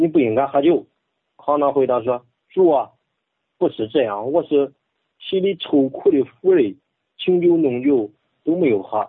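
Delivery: Henan Chinese dialect speech. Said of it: "用河南话".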